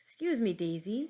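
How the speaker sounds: usual speaking voice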